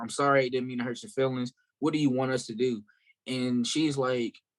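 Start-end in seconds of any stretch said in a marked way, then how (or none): none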